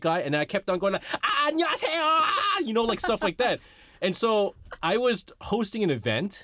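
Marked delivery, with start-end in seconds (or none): 1.2-2.6 high, exaggerated Korean TV entertainer voice, pitched way up. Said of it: "I started talking like them".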